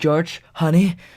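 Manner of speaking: frightened tone. A parent runs to their partner after their son is found frozen, in a scared tone. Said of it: "she says in a scared tone".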